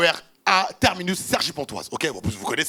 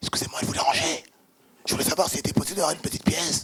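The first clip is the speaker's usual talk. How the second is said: whispered under the breath, hushed; 4 dB quieter than usual. Retelling how the man left asking for a coin: imitating someone whispering. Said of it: "il part en chuchotant".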